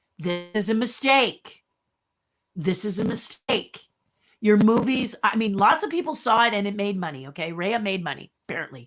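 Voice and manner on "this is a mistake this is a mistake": said firmly with full, emphatic conviction. Restating an opinion about Disney films, with conviction. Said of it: "let me say this again with conviction".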